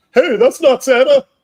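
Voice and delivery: loud, high yelling. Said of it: "he yells out".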